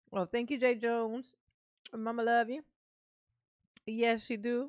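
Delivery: talking with a mouthful. Eating chocolate on camera, the speaker thanks someone while talking with a mouthful. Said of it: "Mama got a mouthful of chocolate".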